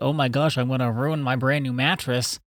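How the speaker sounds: anxious, fretting voice with fear creeping in. Acting out how own voice sounds when worried, mock-worried. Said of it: "when I'm worried, like, ... we can all hear it in my voice".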